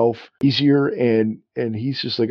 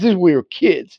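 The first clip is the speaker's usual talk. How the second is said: put-on Boston accent, higher pitched; 6 semitones higher, 4 dB louder than usual. Retelling what he said to Wilma, imitating a Boston accent. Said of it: "he's like basically a Boston accent".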